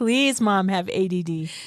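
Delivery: mock kids' begging, pleading voice. Imitating children begging their mom: imitating kids begging.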